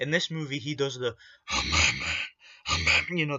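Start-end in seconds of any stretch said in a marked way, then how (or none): 1.5-3.2 mock, very low, loud, gravelly growl voice. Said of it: "the stupid Cookie Monster voice that he does".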